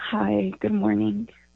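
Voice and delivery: downcast, sad voice. A caller greets a radio host on air in a sad voice. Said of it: "You sound sad".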